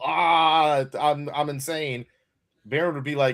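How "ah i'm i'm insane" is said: ordinary talk, nothing marked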